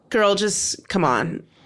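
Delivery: plain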